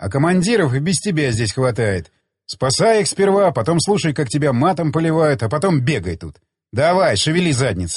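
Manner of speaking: plain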